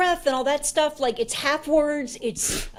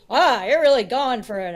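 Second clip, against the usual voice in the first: usual speaking voice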